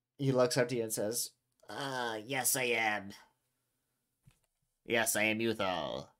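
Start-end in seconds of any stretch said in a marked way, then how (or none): 1.7-6.0 very slow, drawn-out, grunting creature voice. Voicing a character who answers another character: grunt voice. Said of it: "he has a grunt voice as well".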